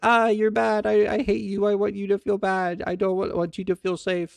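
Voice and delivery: acted-out high, shrill screaming rant. Retelling a man screaming at a scarecrow: imitating someone screaming. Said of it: "fucking screaming at trees".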